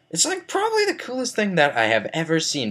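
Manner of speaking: voice breaking upward, cracking very high. Acting out telling a peer about something cool, the speaker's voice cracking. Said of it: "Voice crack".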